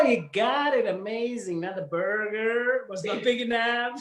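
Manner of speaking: high, put-on American accent. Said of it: "the most American thing you can think of in an American accent".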